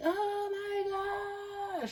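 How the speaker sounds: shrill, very high yell, "my" stretched. Retelling how she kept yelling: imitating someone yelling at top of lungs. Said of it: "she just keeps yelling".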